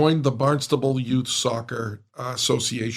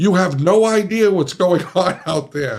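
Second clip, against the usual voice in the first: loud screaming at full tilt; 6 semitones higher, 7 dB louder than usual. Retelling a mother running up to the car: imitating a screaming mother. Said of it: "comes running up to me screaming".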